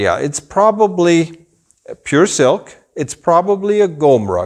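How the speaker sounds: plain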